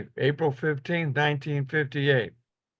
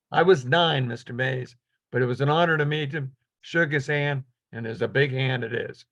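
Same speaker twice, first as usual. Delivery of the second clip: ordinary talk, nothing marked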